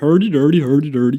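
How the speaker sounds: put-on mock Swedish gibberish voice. Mocking how people imitate Swedes: Swedish Chef voice. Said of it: "We just look at Swedish Chef and go".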